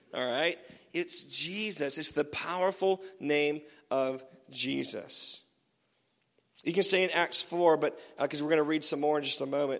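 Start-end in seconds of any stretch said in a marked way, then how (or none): 0.9-5.4 deliberately slow, soft, spelled out. A speaker addressing listeners on scripture, making it really clear, talking slowly. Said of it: "Let me talk slowly for you".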